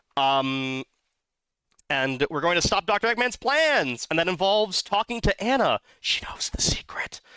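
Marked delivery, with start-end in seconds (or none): 6.0-7.2 breathy, hushed whisper. Reading a game character's line aloud while playing, in a whisper. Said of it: "I'm doing it in um whisper voice".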